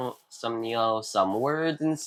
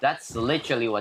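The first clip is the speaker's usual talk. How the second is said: ordinary talk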